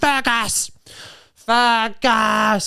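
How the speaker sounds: put-on very slow, stretched-out, mild holler. Retelling a tattooed man on a train screaming at the speaker, retelling a man screaming. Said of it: "he was screaming".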